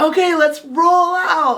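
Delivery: high, slow, called-out voice.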